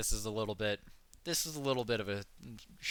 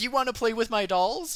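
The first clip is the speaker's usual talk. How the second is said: loud, very high, put-on shrill girlish scream; 12 semitones higher, 6 dB louder than usual. Retelling a haunted house scare: imitating a girl screaming. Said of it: "this girl jumps out and screams at us".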